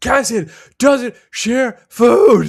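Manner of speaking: mock screaming. Reading out a comment, then acting out a character in mock screaming. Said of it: "I can see him screaming".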